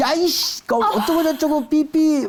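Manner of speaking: mock outburst, high pitched and slow.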